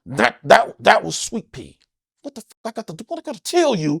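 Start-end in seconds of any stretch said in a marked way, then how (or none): 2.2-4.0 hushed speech through clenched, gritted teeth. Showing how to yell while keeping it down, talking through gritted teeth. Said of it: "Now I'm talking through my teeth".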